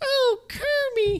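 very high-pitched puppet pig voice. Reacting to a Kermit comparison in a Miss Piggy voice. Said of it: "That was Miss Piggy".

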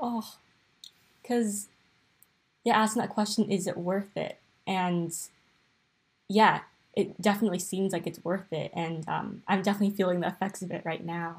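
emotional, choked-up, tearful, rushed, near tears. Reflecting on whether it is worth it, the speaker talks while tearing up. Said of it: "I'm tearing up right now".

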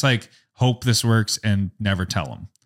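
ordinary delivery

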